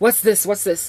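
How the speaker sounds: put-on male voice full of attitude. Retelling how a man saw the ring: imitating a man with attitude. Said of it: "gives me a whole bunch of attitude".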